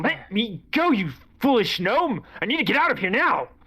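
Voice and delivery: frantic, panicked, high-pitched yell. Voicing a character tripped by a gnome, panicked NPC shouting to be freed. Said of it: "He falls over and he goes".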